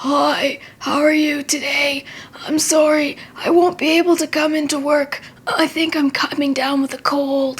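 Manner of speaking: hoarse voice, sounding like coming down sick. Demonstrating the voice of someone coming down with a cold, sick voice with sore throat. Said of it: "Usually it sounds something like".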